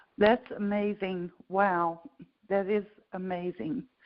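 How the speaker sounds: overcome, choked up, struggling to get words out. Reacting as another speaker describes their results, choked up, barely able to talk. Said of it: "I can bar- barely talk".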